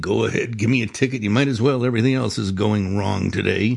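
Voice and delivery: acted-out mumbling mutter. Retelling handing their license to a policeman, the speaker is retelling a mumble. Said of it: "I mumbled something like".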